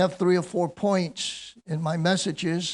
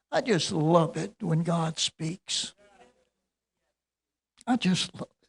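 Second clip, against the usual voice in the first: voice choked up with emotion. Speaking at a second-year anniversary after the Lord spoke to him, choked up. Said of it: "I'm choked up this morning".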